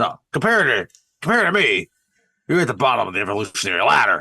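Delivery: contemptuous, dismissive, condescending scorn. Retelling a scene where Edgar rebuffs Kay's tough talk: good Edgar impression. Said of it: "That's a good Edgar impression".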